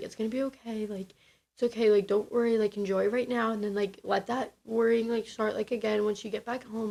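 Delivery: soft-spoken, hushed, comforting, reassuring murmur. Retelling reassuring words from a cruise bae: imitating a soft-spoken man. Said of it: "he was so soft-spoken".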